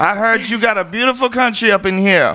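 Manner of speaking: put-on big woman voice, very high.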